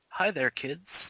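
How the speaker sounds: put-on soft, gentle kids' TV host voice. Greeting kids as Mister Rogers, do a Mister Rogers voice. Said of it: "mister Rogers".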